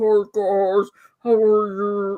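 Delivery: low, deep, dropped voice. Retelling a joke post about sounding like Buffalo Bill: Buffalo Bill voice. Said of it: "that's how I'm gonna sound".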